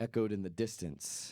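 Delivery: plain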